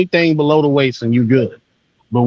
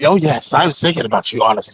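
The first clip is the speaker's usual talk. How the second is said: sinister, menacing, threatening villain voice. Re-saying a quoted line in a more sinister voice: sinister villain voice. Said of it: "saying it in a more sinister voice".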